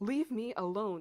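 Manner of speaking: loud ringing shout. Reading a dream account aloud, retelling own shout: retelling a shout. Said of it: "I shouted".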